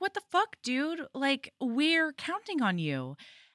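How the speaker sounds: play-acted, really mad, swooping outburst. Retelling a book scene where a girl confronts him: imitating someone angry. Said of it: "she comes over really mad".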